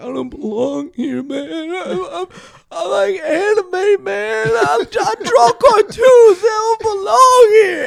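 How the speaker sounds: very high-pitched, crying, wailing, sobbing voice. Retelling a night in jail, quoting a kid: imitating a crying kid. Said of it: "a kid that was crying".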